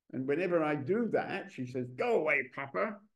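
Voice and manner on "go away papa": mock cross, angry, irritated, dismissive tone. Retelling a daughter's reply after being interrupted while painting: imitating an angry daughter. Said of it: "she gets angry immediately because I'm disturbing her".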